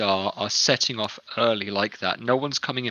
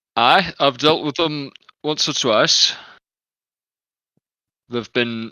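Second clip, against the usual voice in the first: crude put-on Yorkshire accent; 4 semitones higher, 7 dB louder than usual. Answering another character's question in a role-play scene: offensive yorkshire accent. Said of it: "do I do an offensive Yorkshire accent?".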